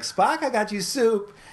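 play-acted very high, drawn-out, all-happy cheer. Retelling a scene where a woman brings Spock soup, acting all happy. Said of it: "like all happy".

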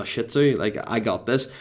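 usual speaking voice

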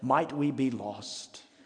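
put-on superior, snooty, talking-down British accent. Retelling what he said after an hour of driving, imitating a condescending british accent. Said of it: "he said in his condescending British accent".

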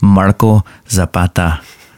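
put-on Spanish accent. Introducing his buddy on the show, saying the name with an accent. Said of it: "I don't know why I said that with an accent".

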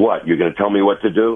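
snippy, sarcastic delivery. Imitating how an angry woman answered a parent, sarcastic and abrupt. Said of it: "in a very sarcastic, abrupt manner".

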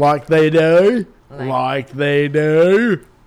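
loud put-on Australian accent, "do" drawn out. Imagining a workplace dating game show with everyone Australian, in an Australian accent. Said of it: "especially if everyone had an Australian accent".

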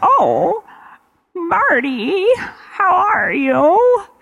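put-on really bad, very high old woman voice. Retelling how a character greets marty, a bad old lady voice. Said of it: "that old lady voice is real bad".

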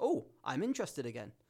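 ordinary delivery

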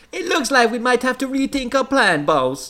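put-on vague Caribbean accent, very high pitch. Reading a story aloud, voicing Kalina on the phone, in a vaguely Caribbean accent. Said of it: "Not that I can really do clearly in this accent".

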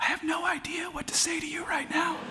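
very high, hushed half-whisper. Retelling how a new priest answered a man at communion, imitating a half-whisper. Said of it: "he leaned in really close to him and he whispered".

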